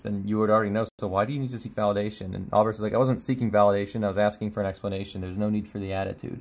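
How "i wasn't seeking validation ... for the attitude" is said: ordinary delivery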